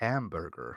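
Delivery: low, put-on American accent, "hamburger" said American-style. Asked to say a word in an american accent: american accent. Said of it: "Can you say hamburger in an American accent?".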